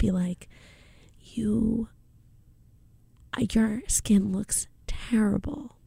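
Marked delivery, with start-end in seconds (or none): 1.2-5.6 gentle, soft-spoken whispered delivery. Retelling what a dermatologist said: imitating a soft-spoken whisper. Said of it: "she would just whisper".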